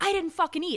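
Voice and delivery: furious, loud, high-pitched screaming yell. Telling a bar story, the speaker acts out a man yelling at her, imitating an angry yell. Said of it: "he's screaming at me".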